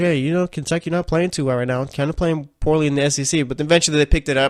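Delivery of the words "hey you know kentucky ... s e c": usual speaking voice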